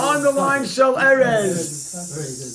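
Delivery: word drawn out very slowly for emphasis. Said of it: "Underline the word Shel Erez".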